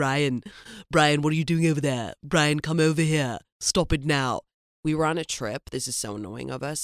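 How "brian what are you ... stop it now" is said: loud, hammed-up put-on cartoon voice, raised. Recalling a voice both of them could do at 19, Stewie voice. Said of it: "the Stewie voice when he's like".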